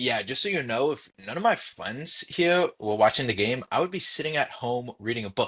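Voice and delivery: ordinary talk, nothing marked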